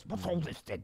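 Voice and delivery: voice with heavy jowls. Imagining how a man they are watching would sound, in a jowly voice. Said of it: "he has a jowls-based voice".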